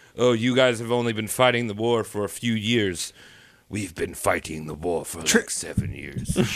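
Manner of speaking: deep, wise master voice. A speaker pictures Chiang talking, in a Master Splinter voice. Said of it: "in like a Master Splinter kind of voice".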